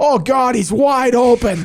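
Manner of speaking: sudden, very high, loud screamed blurt. Retelling how a man in the press box saw an open player; retelling a scream. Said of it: "Just like screams it".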